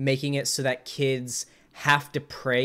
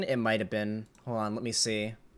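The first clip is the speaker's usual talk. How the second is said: ordinary talk, nothing marked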